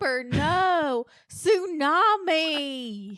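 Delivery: loud Southern drawl, long drawn-out "no". Doing an impression, Parker Posey Southern impression. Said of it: "Parker Posey's in this room".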